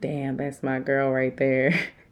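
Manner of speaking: plain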